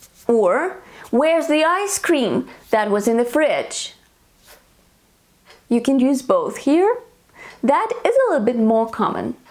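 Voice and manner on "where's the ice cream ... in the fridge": usual speaking voice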